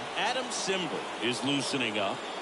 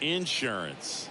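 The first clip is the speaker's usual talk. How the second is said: acted Southern American accent. A baseball announcer says the word the southern way, in a southern us accent. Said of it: "as our friends down in the South would say".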